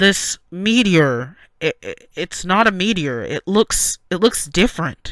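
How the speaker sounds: loud, stammering speech sounding over a radio. A narrator voices a guard reporting over the radio, stammering over a radio. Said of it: "but I can overhear his radio, / but I can overhear his radio".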